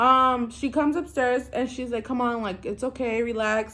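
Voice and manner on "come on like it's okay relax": mock-soothing, calming tone, quieter voice. Retelling how a woman came upstairs to calm the panicking speaker, imitating someone soothing. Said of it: "she's trying to cool me down".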